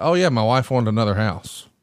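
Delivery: ordinary delivery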